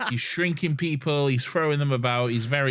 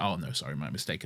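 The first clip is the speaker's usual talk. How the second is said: mock very low, toying, menacing, false-sounding voice; 10 semitones lower, 9 dB quieter than usual. Retelling how the Master pretends it is fine: imitating menacing fake apology. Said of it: "Menacing, menacing".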